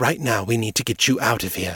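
ordinary delivery

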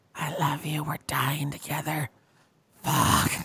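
barely voiced, hushed, close stage whisper. Imagining a lover biting your arm while you wake, imitating someone whispering. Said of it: "And he's whispering".

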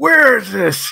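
mock furious shouting, very high-pitched and loud. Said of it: "like when he gets loud".

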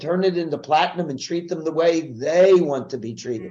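ordinary talk

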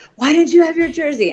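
put-on very high, frustrated yelling. Retelling a frantic search for a jersey, imitating own yell. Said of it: "I'm yelling at him".

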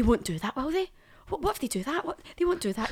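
high, acted pure-panic, anxious second-guessing fretting. Retelling how the mum worried during a self-tape: imitating someone panicking. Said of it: "Get herself pure panic".

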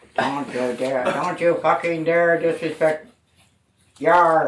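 very low, mechanical pirate robot voice. In an accent game, given the prompt pirate robot, in a pirate robot voice. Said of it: "Pirate robot".

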